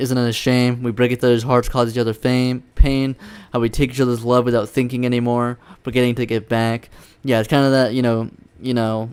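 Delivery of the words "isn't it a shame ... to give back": normal talking voice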